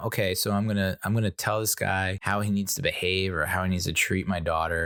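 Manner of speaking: usual speaking voice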